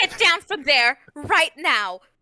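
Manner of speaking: high, loud, stern scolding woman's voice. Someone orders him down after he climbs onto the piano keys: scolding mom voice. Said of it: "her mom voice".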